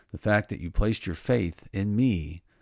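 ordinary talk, nothing marked

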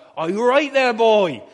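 put-on Suffolk accent. Imitating how local people talk: strong Suffolk accent. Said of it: "a pretty strong Suffolk accent".

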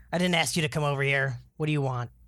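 rough, surly, gruff gnome voice. Voicing a gnome who squints up at the stranger who joined it, gruff gnome voice. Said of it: "And the voice is gruffer".

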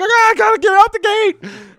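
frantic, panicked yell, very high-pitched. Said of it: "And so he panics".

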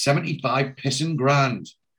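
ordinary delivery

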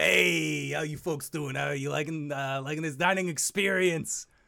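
put-on monster voice. Voicing a beholder greeting the party at their table: Luigi the beholder voice. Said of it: "the beholder gets to your table and just says".

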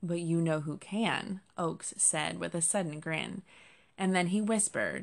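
plain

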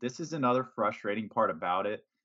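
ordinary delivery

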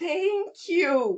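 high, shaky, quavering, trembling voice. Retelling his reply on a call congratulating him, with a mock trembling voice. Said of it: "com a voz trêmula".

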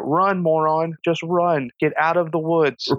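mild, held-back yell, urging, high and drawn out. Retelling a reaction to a movie character: imitating screaming at the TV. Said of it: "I was screaming at the television".

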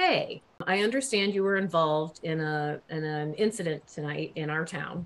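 ordinary delivery

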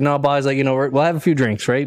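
normal talking voice

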